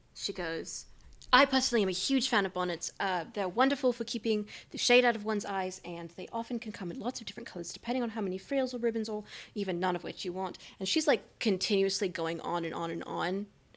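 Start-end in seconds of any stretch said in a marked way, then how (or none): none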